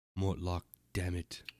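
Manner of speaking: whispered voice. Voicing a character who leans to another's ear: whispering in character. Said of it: "and he whispers".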